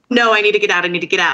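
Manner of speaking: put-on panicked, pleading tone. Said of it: "calm down".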